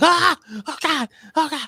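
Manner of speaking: very high, wailing, drawn-out scream. Retelling how the wife screamed playing a horror game: imitating someone screaming. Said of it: "and she's screaming".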